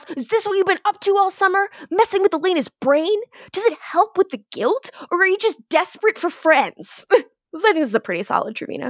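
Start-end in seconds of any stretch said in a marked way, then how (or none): 0.2-7.0 hostile, confrontational yell, pitched up. Recapping a story, retelling how one character yells at another, retelling a yell. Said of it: "He yells".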